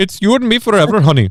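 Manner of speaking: very high-pitched, put-on Indian accent. Acting a love scene from the imagined Bollywood-voiced game: put-on Indian accent. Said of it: "again, the voice actors".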